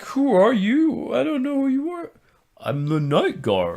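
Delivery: very high, overwrought, overacted, swooping emotional delivery. Acting out a night guard's line from a movie: overacted put-on emotional delivery. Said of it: "You're putting too much emotion into that".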